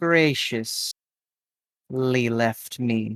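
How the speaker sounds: dry, knowing, arch and wry delivery. Voicing a character who pauses before a sly remark: arch, with a cocked eyebrow. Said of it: "almost with a cocked eyebrow".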